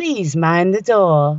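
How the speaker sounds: put-on slow, recorded-sounding British announcer accent. Recalling first moving here, the speaker imitates the elevator lady: british elevator announcement voice. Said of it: "it's so British".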